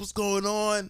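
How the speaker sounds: very high-pitched, disbelieving scream. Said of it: "screaming, like".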